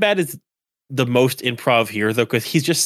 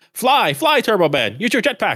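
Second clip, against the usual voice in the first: high scream, newscaster style, every word oddly enunciated; 8 semitones higher than usual. Retelling a line from a parade newscaster: imitating a newscaster screaming. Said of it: "newscaster just screams".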